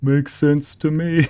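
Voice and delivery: slow, drawn-out, high cartoon voice. Reacting to a chat comment during a stream, Patrick Star voice. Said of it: "puts on a Patrick Star voice".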